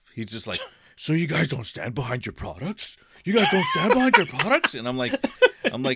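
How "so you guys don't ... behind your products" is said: put-on anger, higher, faster. Retelling what a customer said when he got all pissed off, imitating him. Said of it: "he gets all pissed off".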